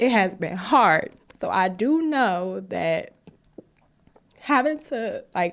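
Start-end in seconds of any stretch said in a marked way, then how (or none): 0.0-1.1 emotional, choked voice. Talking about six hard years in New York, getting emotional. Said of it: "I'm getting emotional".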